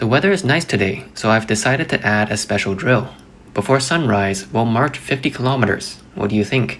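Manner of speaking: ordinary talk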